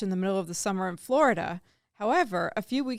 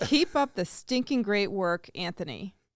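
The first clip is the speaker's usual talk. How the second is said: ordinary talk, nothing marked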